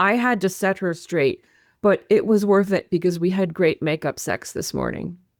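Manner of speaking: ordinary talk, nothing marked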